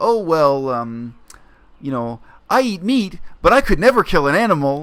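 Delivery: sweet, chirpy put-on cuteness in a high voice. Retelling what a teacher said jokingly: imitating a high, chirpy cute voice. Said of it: "in this kind of high, chirpy voice".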